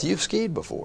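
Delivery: very soft, whispered mutter under the breath. Speaker retells what the guy said as they skied by, retelling a mutter under breath. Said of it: "he said under his breath".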